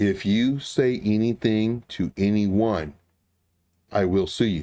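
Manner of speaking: acted, very cool, calm, composed, slow delivery. Retelling a threat someone made after a phone call: imitating a calm, cool voice. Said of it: "in the calmest, coolest voice ever".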